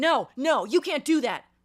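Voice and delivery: high, drawn-out, insistent, angry shouting. Retelling how a drunk friend got mad over a hug: retelling a shout.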